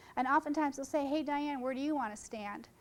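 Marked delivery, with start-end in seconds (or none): none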